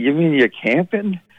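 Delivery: put-on Scottish accent. Retelling what a woman asked him at the first show, imitating KT's Scottish accent. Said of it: "she said it in a Scottish accent".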